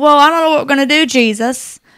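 put-on rural country accent. Retelling a disciple's words to Jesus in the feeding story, in a country accent. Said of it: "With that country accent".

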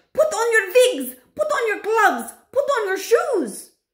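shrill, very high, loud shouting. Reading the Grand High Witch's line as a boy bangs on the door: shouted. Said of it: "shouted the Grand High Witch".

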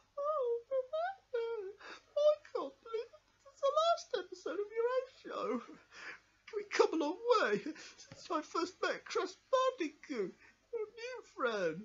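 speech through sobs, very high-pitched. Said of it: "Don't cry".

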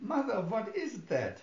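barely-there, faint, high squeak. Narrator reads the daughter's question to her mother, barely able to squeak. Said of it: "The daughter could barely squeak".

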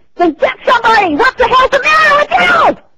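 high, loud, furious angry yell.

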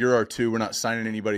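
ordinary talk

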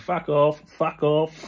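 mock half-hearted shout. Speaker recalls hearing his name called on the tannoy; retelling a shout. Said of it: "I'm just shouting".

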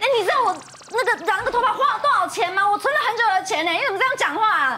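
quick, high-pitched burst of anger.

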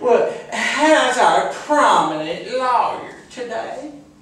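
very high, nosy, prying busybody voice. Retelling a street encounter, the speaker voices a woman they never cared for, imitating her. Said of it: "I saw this woman I never really particularly cared for".

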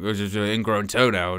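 put-on gravelly, mumbled impression voice.

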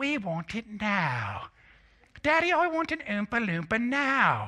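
stretched-out, high, swooping delivery. Acting out a scene from Willy Wonka: Veruca voice. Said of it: "Here's Veruca right here from Char-, from Willy Wonka. she goes".

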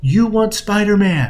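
firm, insistent tone. Retelling a mother leaning in to her son, speaking loudly but not yelling. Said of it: "she says loudly, not yelling, but loudly".

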